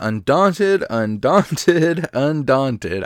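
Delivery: giggling and laughing through the words. Naming a way to earn Transmute Stones: laughing while talking. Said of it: "I can't get through that without laughing".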